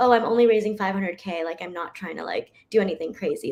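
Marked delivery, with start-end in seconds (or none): none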